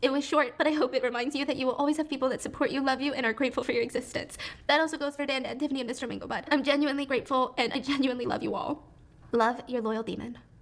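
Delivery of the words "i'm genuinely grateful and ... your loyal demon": tearful words through a cracking, breaking voice. Reading a farewell letter aloud to friends, signing off while crying, voice breaking. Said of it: "You're already crying".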